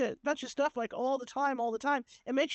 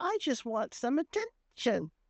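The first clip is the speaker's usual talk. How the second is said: put-on slow, stretched little girl voice. Retelling a voice you heard while sitting with your investigator, high-pitched little girl voice. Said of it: "real high pitched like that".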